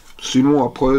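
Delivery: ordinary delivery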